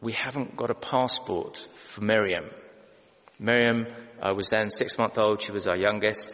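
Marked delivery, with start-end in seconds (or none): 0.0-2.5 very quiet, barely audible, stunned, shocked half-whisper. Retelling his wife's words on the drive to the ferry, a quiet shocked half-whisper. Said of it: "in a very quiet, shocked whisper".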